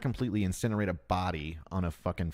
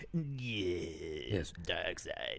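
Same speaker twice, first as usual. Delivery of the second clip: creepy put-on villain voice, quieter; 7 dB quieter than usual. Imagining how Darth Vader would answer: creepy Darth Vader voice. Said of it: "I do creepy".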